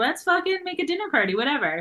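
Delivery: put-on drunken, tipsy outburst, pitched way up high. Describing a cook the speaker wants to be like, imitating drunk speech. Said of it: "she's just getting drunk and being like".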